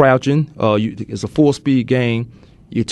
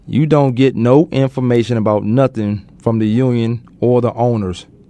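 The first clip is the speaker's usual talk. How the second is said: normal talking voice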